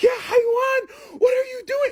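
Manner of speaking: loud yell. Retelling how grandma caught the speaker sneaking a puff: imitating grandma yelling. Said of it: "yelling at me".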